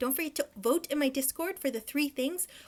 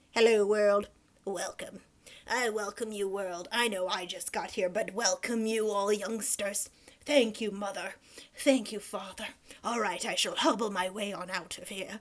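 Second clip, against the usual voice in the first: full-on put-on elderly grandpa voice; 7 semitones lower than usual. Imagining a newborn greeting the world, old grandpa voice. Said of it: "Just full on grandpa mode when you come out".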